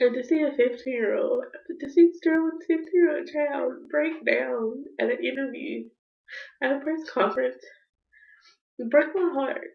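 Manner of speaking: speaking while crying, through tears. Speaking to their YouTube audience, crying. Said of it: "I cried like I'm crying now".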